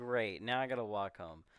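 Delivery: ordinary delivery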